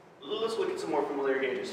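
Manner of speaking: normal talking voice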